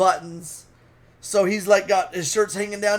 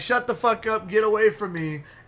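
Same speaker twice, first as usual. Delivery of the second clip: put-on talking through laughter. Retelling what was said to a man approaching in a casino, retelling laughing while talking. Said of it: "I'm laughing".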